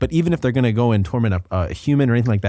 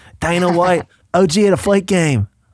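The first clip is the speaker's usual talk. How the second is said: put-on leprechaun-like Irish accent, higher pitch; 7 semitones higher, 3 dB louder than usual. Doing an impression that sounds like a leprechaun: Conor McGregor impression. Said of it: "if you sound like a leprechaun".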